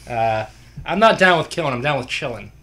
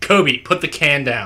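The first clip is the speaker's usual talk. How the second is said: mock, very stern delivery. Telling a story, quoting what Adam said, very sternly. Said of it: "Adam said very sternly".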